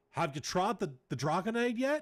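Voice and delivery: horrible put-on Australian accent, loud, high. Retelling what an australian guy said to him late at night, in a horrible australian accent. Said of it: "It's a horrible Australian accent".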